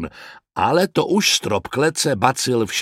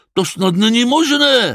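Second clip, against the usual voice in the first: angry, raging, furious voice; 11 semitones higher, 4 dB louder than usual. Narrating a story, a character rages at the gunshots, angry raging voice. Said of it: "vztekal se Mračoun".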